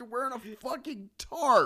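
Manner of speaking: high, loud disbelieving yell. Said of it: "it's like".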